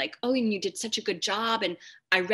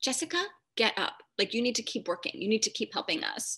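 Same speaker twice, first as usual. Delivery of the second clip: put-on anger, much faster. Speaker acts out her internal tyrant pushing herself, imitating an angry demand. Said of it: "angry about this".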